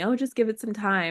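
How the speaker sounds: mock condescending tone. Retelling what doctors told them: imitating condescending doctors. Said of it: "it felt very condescendingly telling me".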